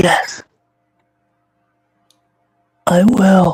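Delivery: very low, quiet whisper. Voicing a dying character answering a player: lowest of whispers. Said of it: "in the lowest of whispers".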